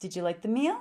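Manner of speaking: question-like rising tune on meal. Teaching English intonation, asking an example question with rising pitch at the end. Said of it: "My voice goes up".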